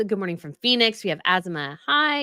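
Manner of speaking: ordinary talk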